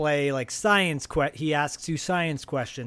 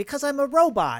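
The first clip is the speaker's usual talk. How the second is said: put-on very high, loud, shrill New York–Jersey accent; 12 semitones higher, 5 dB louder than usual. Retelling an old 2XL tape, the robot answering its visitor, in a New York accent. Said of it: "the robot has like this New York kind of New Jersey accent".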